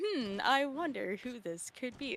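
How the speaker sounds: put-on dramatic, sarcastic tone. Retelling own reaction to a donation name: imitating own dramatic sarcastic tone. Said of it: "in the most dramatic, sarcastic way".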